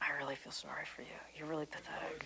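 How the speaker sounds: hushed, breathy whisper full of pity.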